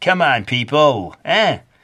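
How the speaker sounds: Brooklyn accent, laid on playfully for fun. Explaining stripes across a cat's leg, the speaker breaks out a brooklyn accent. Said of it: "broken out the Brooklyn accent".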